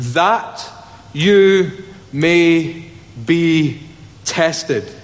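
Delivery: slow reading, each word set apart by pauses.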